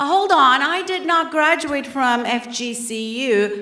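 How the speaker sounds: ordinary talk, nothing marked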